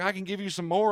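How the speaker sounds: jittery, nervous tone. Retelling what the doctor said during the procedure: imitating a nervous doctor. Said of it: "he gets all nervous".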